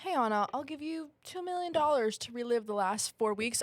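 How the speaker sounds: plain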